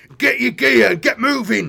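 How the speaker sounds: very loud, rough, roaring bellow. Reading the story, the narrator voices an orc leader giving orders, bellowing. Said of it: "he bellowed".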